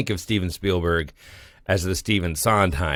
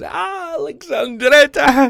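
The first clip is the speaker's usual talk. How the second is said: play-acted, very high, loud, giddy delight; 7 dB louder than usual. Retelling a film scene where a father learns the city: imitating someone giddy. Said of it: "and he's so giddy".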